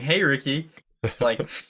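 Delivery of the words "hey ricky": sneering, sarcastic delivery. Retelling kids from the rec laughing at skating: imitating a sarcastic greeting. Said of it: "sarcastically saying".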